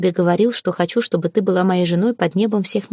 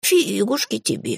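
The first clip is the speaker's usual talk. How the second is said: snide, mocking, higher pitch; 3 semitones higher than usual. A familiar retorts to the narrator's teasing, even more snide. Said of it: "Еще ехиднее, если это возможно".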